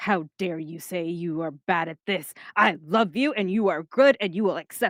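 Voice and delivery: mock-aggressive affectionate tone. Describing how she answers a friend, the speaker acts it out with mock-aggressive affection. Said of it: "Like that kind of like aggressiveness".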